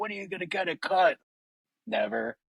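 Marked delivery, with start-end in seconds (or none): 0.0-1.2 acted-out high-pitched yell. Retelling the wife's words to the other speakers: imitating wife yelling. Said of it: "my wife yells at me, like".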